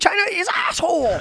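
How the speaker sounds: squeaky voice pushed very high. Describing someone's impersonation, then mimicking it in a very high-pitched impression. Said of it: "He goes real high up and he's like".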